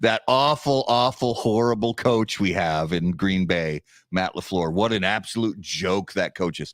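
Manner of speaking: sarcastic, tongue-in-cheek scorn. Giving Coop a little razzing about the Green Bay coach: sarcastic. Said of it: "I'm being sarcastic".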